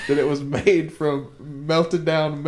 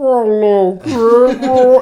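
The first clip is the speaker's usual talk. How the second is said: shrill, booming, very high and loud demonic cartoon voice; 9 semitones higher, 10 dB louder than usual. Retelling a worn toy tape playing too slowly: demon Mickey voice. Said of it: "It was the demon Mickey".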